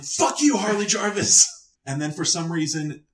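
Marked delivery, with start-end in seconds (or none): 0.0-1.5 very high, shrill, long-held drawn-out shout. Retelling a story, re-enacting yelling at harley jarvis. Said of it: "And just yelling".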